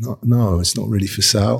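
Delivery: plain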